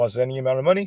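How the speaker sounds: quick, rattled-off, a little bit fast.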